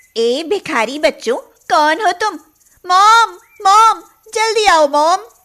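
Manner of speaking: very high, shrill screaming shout. A narrator reads Gungun calling for her mom from the door; shouting. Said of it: "ऐसे क्यों चिल्ला रही हो?".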